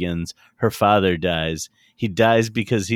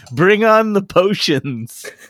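put-on drunk giggling voice, higher and louder; 11 semitones higher, 5 dB louder than usual. Retelling a movie scene of a drunk man at a bar: imitating Robert Stack giggling drunk. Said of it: "giggling and he's like".

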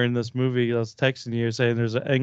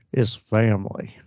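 put-on country accent, much lower pitch; 2 semitones lower than usual. Asked to do Dominic Toretto, a speaker tries his line in a country accent. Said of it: "I can't do it without doing country".

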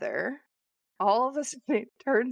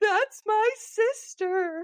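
mock, very high screaming little girl voice; 12 semitones higher than usual. Telling a story about twin girls, imitating one girl screaming. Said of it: "the other girl starts screaming".

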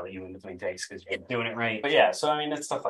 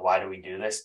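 ordinary talk

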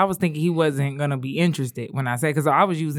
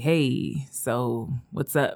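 very slow, halting, awkward speech; 3 semitones lower, 4 dB quieter than usual. Retelling how a guy at a club approached her: imitating an awkward guy. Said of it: "real awkward".

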